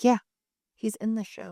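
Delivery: ordinary talk, nothing marked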